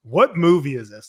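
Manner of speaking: mock frazzled, frantic, flustered tone. In a movie theater, the speaker retells asking the woman beside them, frantic. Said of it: "And I was like, frantic".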